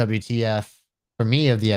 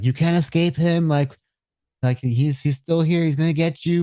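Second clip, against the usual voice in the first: put-on, high-pitched screaming; 6 semitones higher than usual. Retelling a scene where a character screams at a man leaving by ship: imitating someone screaming. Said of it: "she's screaming at him".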